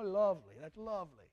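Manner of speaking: light, nice little Irish brogue. Speaker showing how Irish people say the word lovely, Irish brogue. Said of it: "with that nice little Irish brogue".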